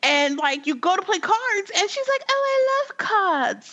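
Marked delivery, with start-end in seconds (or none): 2.3-3.7 put-on British accent, very slow and high. Speaker acts out a woman's reply in a card-playing scene, in a british accent. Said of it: "that's my British accent".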